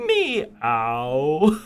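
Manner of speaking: pretentious affected cat meow. While apologizing, the speaker tries out a cat meow, pretentious meow. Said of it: "that just sounds pretentious".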